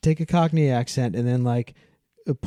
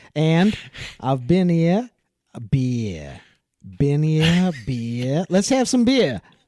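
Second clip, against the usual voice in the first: slow put-on Australian accent, "beer" stretched long; 4 semitones higher, 3 dB louder than usual. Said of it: "You've obviously absorbed this movie".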